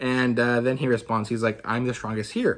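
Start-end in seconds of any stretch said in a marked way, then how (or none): 1.6-2.6 put-on jokey, bumbling character voice. Retelling a manga character's reply to the kaiju: Hoshina's jokey tone. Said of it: "very jokey kind of like".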